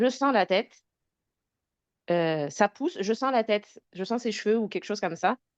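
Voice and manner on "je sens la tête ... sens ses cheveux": ordinary talk, nothing marked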